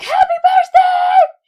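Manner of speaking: very high, very loud, full-volume screaming shout. Retelling calling to a friend across a loud boat: retelling a scream. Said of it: "I was screaming across the entire boat".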